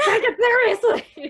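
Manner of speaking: piercing, shrill, booming mad-scientist holler. Joking about a friend yelling at everybody online: mock yelling like a mad scientist. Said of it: "a mad scientist yelling at everybody".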